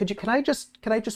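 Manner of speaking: fearful. Game master voicing a player's character held back by fear while investigating, fearful. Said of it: "Fear is kind of getting in your way".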